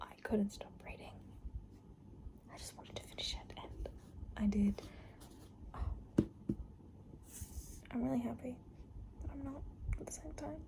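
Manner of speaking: whispering. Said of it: "I'm whispering because my dad and mum are".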